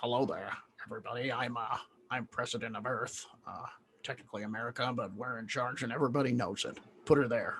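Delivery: soft, hushed puppet character voice. Speaker voices a president meeting aliens: sounding like Grover. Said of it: "I'm kind of sounding like Grover from the Muppets now".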